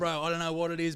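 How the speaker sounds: exaggerated Australian accent. Retelling own reply at a cocktail bar: imitating own exaggerated Aussie accent. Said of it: "I Aussied up".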